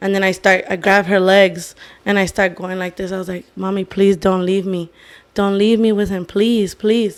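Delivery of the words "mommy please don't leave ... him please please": put-on crying, tearful pleading voice. Retelling a ceremony memory of begging mom not to leave, imitating crying and pleading. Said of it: "crying to my mom".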